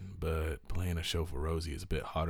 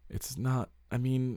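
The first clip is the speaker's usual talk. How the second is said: very slow, high-pitched, halting stammer over words; 8 semitones higher, 3 dB louder than usual. A character answers the woman in front of her, stammering. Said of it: "Grace stammered".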